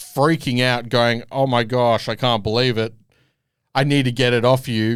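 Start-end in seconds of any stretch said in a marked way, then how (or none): none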